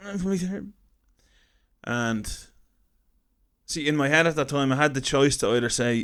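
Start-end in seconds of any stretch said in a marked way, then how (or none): 0.0-0.7 voice breaking a little, cracking, pitched up. Retelling a plea to a woman at the car park: imitating own voice cracking. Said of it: "I made my voice kinda crack a bit".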